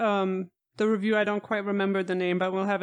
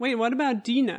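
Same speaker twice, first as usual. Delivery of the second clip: ordinary delivery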